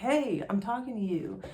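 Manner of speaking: insistent, demanding, attention-grabbing call. Retelling what the husband says when she zones out: imitating husband yelling.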